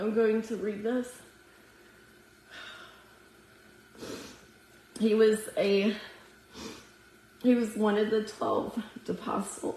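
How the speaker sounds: teary, close to crying. Sharing a prayer experience before reading scripture aloud: teary, close to crying. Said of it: "I have tears in my eyes right now".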